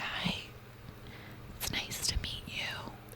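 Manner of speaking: whispered, barely voiced, very quiet. Recounting how a mute man said hello when they met, whispered. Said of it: "he legitimately whispered like this".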